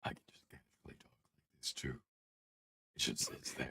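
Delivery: put-on monster voice. Talking casually to the others in a Venom voice. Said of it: "I fucking love the Venom voice".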